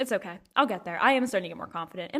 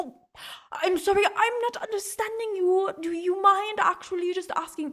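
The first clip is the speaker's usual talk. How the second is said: really bad, high fake German accent; 7 semitones higher than usual. Speaker acts out someone answering her German coffee order, in a really bad German accent. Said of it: "That's my really bad German impression".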